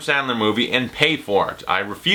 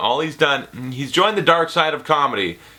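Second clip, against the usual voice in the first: ordinary talk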